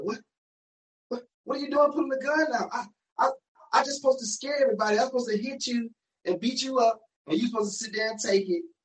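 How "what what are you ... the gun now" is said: put-on high, shocked, confused, bewildered old lady voice. Retelling a story, speaker voices the old lady facing the gun, imitating shocked, confused old lady. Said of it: "Old lady was so shocked and confused".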